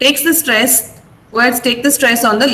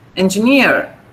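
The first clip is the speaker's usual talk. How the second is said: engineer with stress on final syllable neer; 4 semitones lower than usual. Showing students how to say the word with stress: stress on NEER in engineer. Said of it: "You have to pronounce it with the stress".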